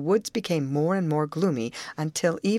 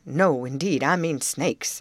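ordinary delivery, nothing marked

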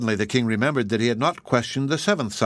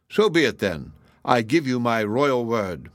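plain

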